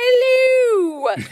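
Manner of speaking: very high, drawn-out, stretched yell. Showing how to call out while cooking with the kids: yelling in Julia Child voice. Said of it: "I will yell out in my best Julia voice".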